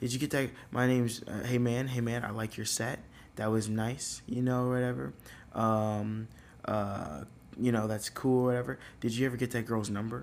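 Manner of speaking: normal talking voice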